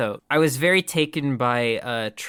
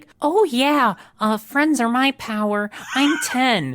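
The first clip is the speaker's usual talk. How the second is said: put-on squeaky, very high childlike voice; 11 semitones higher, 4 dB louder than usual. Imitating actors who change their voice in flashbacks: childlike put-on voice. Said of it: "actors will like change their voice to sound like a child's".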